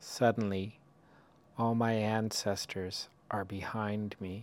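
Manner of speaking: slow, unhurried reading, each line given space. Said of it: "I'll read it slowly".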